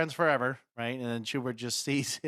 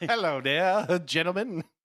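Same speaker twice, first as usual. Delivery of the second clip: put-on voice, high and loud; 5 semitones higher, 5 dB louder than usual. Joining in with the Harry Potter-ish voice idea: Harry Potter-ish voice. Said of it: "had to go Harry Potter-ish kind of vibe".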